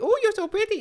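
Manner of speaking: terrible put-on Indian accent, very high and loud. Retelling compliments from random strangers in her DMs: bad Indian accent. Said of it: "That was a terrible accent".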